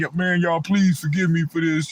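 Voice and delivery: blubbering, pleading, whiny, crying voice. Imitating a fake apology on camera: mock whining and crying. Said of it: "be fake on the camera and be whining and crying like".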